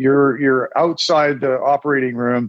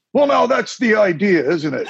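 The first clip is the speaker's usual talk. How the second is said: put-on high, thick Scottish accent, Glasgow-style. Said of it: "in a very thick Scottish accent, which I'm terrible at".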